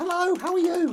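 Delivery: very high, loud cat voice, squeaked out.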